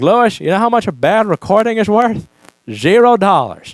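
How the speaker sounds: put-on elderly, toothless Texas voice. Speaker quotes an old man from Texas addressing him, toothless old Texas accent. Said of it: "combination of Texas accent, missing all your teeth, and being over eighty years old".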